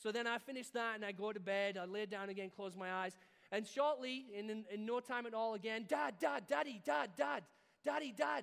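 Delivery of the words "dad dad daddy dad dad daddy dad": put-on high, rough child's voice shouting nonstop. Retelling a son calling out during a thunderstorm: imitating a child shouting for dad. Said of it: "He's shouting".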